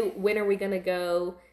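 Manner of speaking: usual speaking voice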